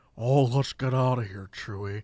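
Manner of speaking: dropped very low and soft. Mocking someone's attempt, speaker does a bad Han Solo impression. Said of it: "Doesn't sound like Han Solo".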